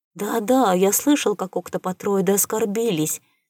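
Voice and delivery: ordinary talk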